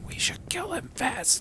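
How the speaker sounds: hushed, whispered aside. In a game, the narrator voices a man whispering to the other guys, whispering. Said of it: "he whispers to the other guys".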